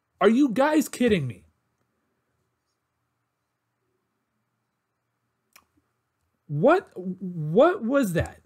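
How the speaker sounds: furious, disbelieving outburst with a drawn-out "what". Ranting at a basketball team after game two, really mad. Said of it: "I'm really mad right now".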